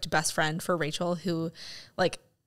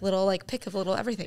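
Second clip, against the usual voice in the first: ordinary talk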